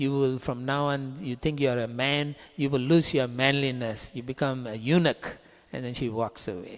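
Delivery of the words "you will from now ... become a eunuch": plain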